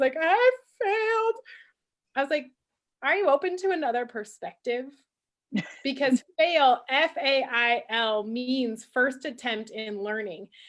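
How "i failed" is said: mock choked-up crying, very high and tearful. A parent retells a daughter's words after a snowboarding run, imitating a child crying. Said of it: "she's just in tears".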